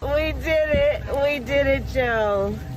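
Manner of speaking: very high-pitched put-on voice. Showing another speaker what they sound like: Kamala Harris voice. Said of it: "why do you talk like Kamala Harris?".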